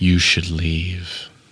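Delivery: perfectly composed, serene, very calm and even voice. Voicing a voice heard inside the players' heads: very calm. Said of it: "very calmly says".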